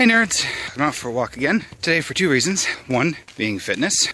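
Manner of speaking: slightly out-of-breath chatter, winded, catching breath. Greeting viewers while out on a walk just after running, slightly out of breath. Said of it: "slightly out of breath because I just finished running".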